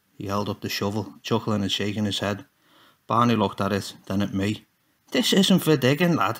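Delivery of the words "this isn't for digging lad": higher, spitting, scolding words. Holding up the shovel, he answers the narrator, spitting the words, almost scolding. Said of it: "he spat, almost scolding me".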